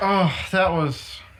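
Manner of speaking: slow, drawn-out, pained groan. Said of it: "You sound like you had a bad experience in the bathroom".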